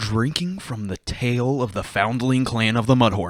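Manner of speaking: affected, put-on reading voice. Reading a beer description aloud to viewers in a put-on reading voice. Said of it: "let me get my reading voice going".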